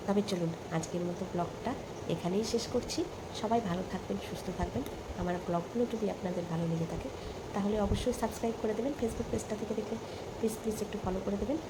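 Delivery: quick, hushed talk.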